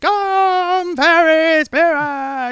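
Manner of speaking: loud shouting. Describing how she shouts in the weirdest scene: shouted line. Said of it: "Or she's just shouting, like".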